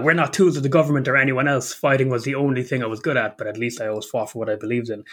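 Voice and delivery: ordinary talk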